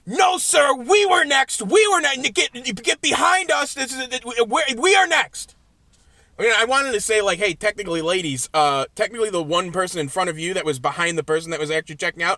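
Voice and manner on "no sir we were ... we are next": very high, shrill, very slow, drawn-out yelling. Retelling two ladies at a checkout yelling at a man, imitating ladies yelling. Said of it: "These two ladies start yelling at him".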